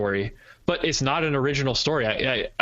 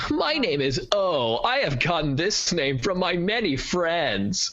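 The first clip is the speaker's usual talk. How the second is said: put-on eager, cheesy, chatty nonstop kid narrator voice; 3 semitones higher than usual. Imitating a film character who narrates nonstop: imitating a chatty narrating character. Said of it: "That kid just would not shut up".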